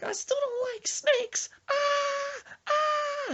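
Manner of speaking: shrill, very high, very slow, drawn-out frightened wail. Retelling how someone reacted to a garden snake: imitating someone screaming in fear. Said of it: "and he's just screaming".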